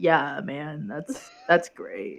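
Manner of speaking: put-on low, slow, tired stoner drawl. Showing how the voice sounds when tired: imitating own tired stoner voice. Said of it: "You get stoner voice?".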